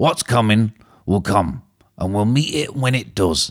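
hint of put-on Yorkshire accent. Performing a quoted line, slipping into a slight yorkshire accent at the end. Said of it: "I went a bit Yorkshire at the end".

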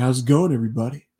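put-on slight Southern accent. Retelling how a guest greeted the space: slight Southern accent imitating Zubaz. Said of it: "He kinda has a slight Southern accent".

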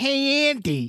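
shrill, very high, loud called-out voice. Announcing a character has returned: Chucky voice. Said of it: "Chucky's back".

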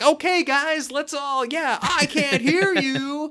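peppy, rallying, very high, loud. Imitating a lady warming up a crowd: imitating a peppy hr lady. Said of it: "her kind of natural H R presentation".

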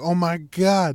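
emphatic loud outburst in a put-on voice. Retelling a text the sister sent in all capitals: imitating sister's all-caps text. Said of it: "so I gotta, you know, put in her voice".

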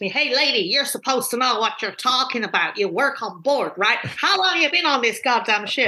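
put-on speaking in an American accent. Retelling what a man on a ship said to her, in American accent. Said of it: "Very good American accent".

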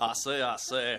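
put-on cartoon rooster voice. Joking about a texter's next pseudonym: Foghorn Leghorn voice. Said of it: "He's Foghorn Leghorn".

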